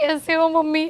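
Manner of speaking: speaking through tears. In a role-play, the speaker greets the mother while crying. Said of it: "तू ऐसे रोते रोते क्यों आ रही है".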